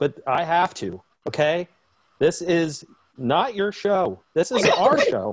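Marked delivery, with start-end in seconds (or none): 2.2-5.3 animated, playfully stern, half-joking tone. Telling Mom the rules of the show, mock stern. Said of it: "I'm sorry to get a little bit stern with you".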